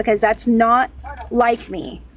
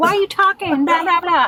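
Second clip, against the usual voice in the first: put-on, pitched-up scolding yell, hollering; 6 semitones higher than usual. Explaining why they can't talk while driving: imitating husband yelling. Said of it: "I don't want him yelling at me like".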